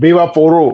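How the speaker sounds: loud Spanish accent, put on for show. Asked to say the line for a commercial, in a Spanish accent. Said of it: "you got to say it with the Spanish accent".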